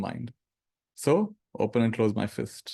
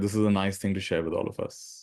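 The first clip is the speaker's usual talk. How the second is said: ordinary delivery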